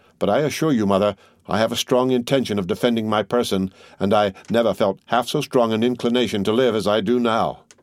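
plain reading voice

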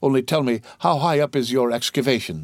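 ordinary delivery

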